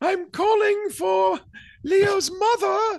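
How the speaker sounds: very high, loud, slow, fake woman's voice. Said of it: "You can't fake women".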